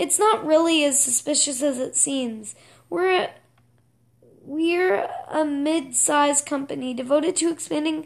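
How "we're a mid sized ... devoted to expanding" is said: ordinary delivery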